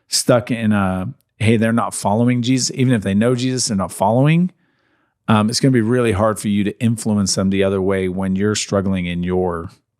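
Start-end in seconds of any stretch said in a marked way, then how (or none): none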